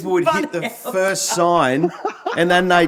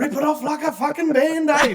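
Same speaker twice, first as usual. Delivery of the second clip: high-pitched, acted-out yell; 8 semitones higher than usual. Retelling helping a car into the car park: imitating own past yelling. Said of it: "And I'm yelling out".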